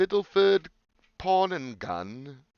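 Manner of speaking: put-on British accent, loud and high. Reading out a gun shop name: British accent. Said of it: "I don't know why I used the British accent".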